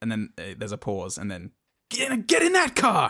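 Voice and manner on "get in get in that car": very high, shrill, shouted, acted out. Retelling a rescue scene where a man yells an order: imitating a yell. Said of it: "he's yelling at her".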